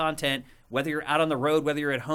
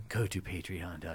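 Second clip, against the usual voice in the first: ASMR-style whisper, much quieter, lower; 9 semitones lower, 11 dB quieter than usual. Plugging their Patreon to listeners, the speaker is whispering into the microphone. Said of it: "I'm whispering into the microphone".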